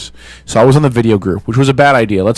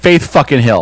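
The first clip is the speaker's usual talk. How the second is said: normal talking voice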